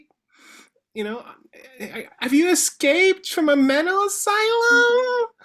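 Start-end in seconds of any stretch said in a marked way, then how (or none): 1.8-5.3 put-on high, loud, fussing old-woman yell. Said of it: "seemingly senile women are yelling down there".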